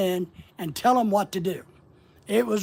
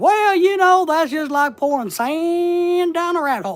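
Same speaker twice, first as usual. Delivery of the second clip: put-on high, loud, slow old grandma voice. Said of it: "my grandma used to have a saying".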